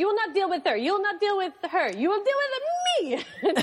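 put-on very high, furious, swooping rant, Dutch-accented woman. Retelling how she points at the speaker and says this, imitating an angry Dutch woman. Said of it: "really, really angry Dutch woman".

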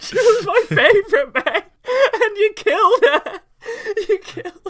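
very high, very loud wailing, sobbing cry. Retelling how they reacted after sacrificing a party member in a game, mock crying. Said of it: "I'm crying in the corner like".

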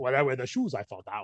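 put-on English spoken with a Guatemalan accent. Quoting a man who always walks around barefoot, in a Guatemalan accent. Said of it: "the way he says it with his Colombian, I'm my Guatemalan-ness".

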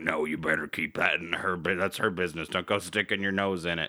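put-on low gravelly voice. Recapping a show, voicing a character's warning to another: imitating a low gravel voice. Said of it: "He's got a really low gravel voice".

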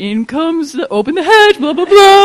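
put-on high sing-song baby talk. Retelling Carter offering Evan a chip with dip: Carter's baby talk. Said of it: "like baby talking to Evan".

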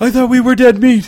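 very high, very loud, fast, breathless stammer. Bree, on an all-out run with Chelan through the halls: stammering quickly between breaths. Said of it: "stammered Bree quickly over her next deep breath".

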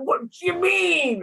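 put-on Italian accent. Imitating a friend whose Italian voice comes out sometimes: Lil Goot's Italian voice. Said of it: "her, like, Italian voice comes out".

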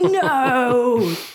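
loud, high cry of dismay on "no".

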